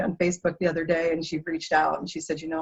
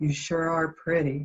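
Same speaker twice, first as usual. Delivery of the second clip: put-on flat monotone teenage voice. Retelling John, bagging groceries at Kroger, complimenting a customer, in flat monotone. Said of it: "in his John voice".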